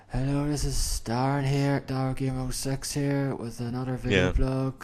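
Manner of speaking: dead level, stiff, flat monotone voice. Imitating own early video intros: imitating own old monotone. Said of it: "Just so monotone".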